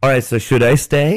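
acted-out joking, jokey tone. Retelling a talk with a roommate about moving out: retelling a joking question. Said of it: "Like jokingly".

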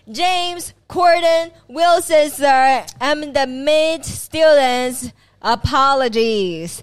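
very slow, deliberate, loud, high, drawn-out shout. Recounting a police interrogation, he answers the cop's question: retelling a shout. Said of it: "And he shouted".

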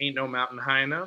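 ordinary talk, nothing marked

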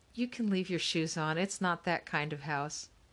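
plain

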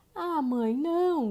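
put-on boy's high, protesting shout, crying out. A boy sees his mother putting on her sealskin, shouting. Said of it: "gritou o menino".

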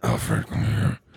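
very low, deep, growling voice. Friends joke about Vin Diesel as Batman; Batman voice. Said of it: "You actually sound like Batman".

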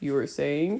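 growling playfully. Reading a romance aloud, the man answers the woman on his chest: playful growl. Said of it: "He growled playfully".

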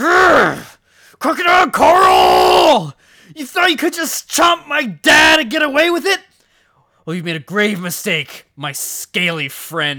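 acted furious, loud, high, hopping-mad delivery. Voicing a bunny who confronts the crocodile that ate his father: acting hopping mad. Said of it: "Little Benny's all grown up and hopping mad".

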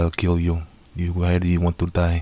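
cheesy put-on Russian mob accent. Quoting a villain's lines, in a cheesy Russian accent. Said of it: "He's the Russian accent".

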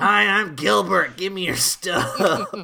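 very loud, slow, belted comic voice. Joking about a stuff rat character: Louis Anderson voice. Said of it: "That's more Louis Anderson".

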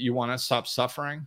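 ordinary talk

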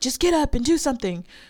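acted, high, urging shout. Describing how viewers yell at people on the show, mock screaming at the tv. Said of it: "you're like screaming at the TV".

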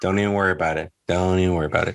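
acted, gentle, easygoing, very soothing, calm reassuring tone. Two speakers riff on a put-on voice; this one does a very soothing, calm voice. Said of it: "It's got a very soothing, calm voice".

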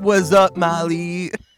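loud, hammy, goofy radio DJ voice. Greeting the co-host to open the podcast: funny DJ voice. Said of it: "like, D J funny voice?".

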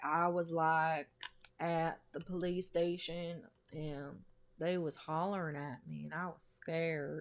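plain, artless, simple-minded way of talking. Imitating how a young man talks, compared to Forrest Gump: imitating Jesse's speech. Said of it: "That's how he fucking talks".

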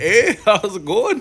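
put-on near-Canadian Minnesota accent, loud and high. Imitating a schoolmate from Minnesota greeting him, in a Minnesota accent. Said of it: "Canadian almost".

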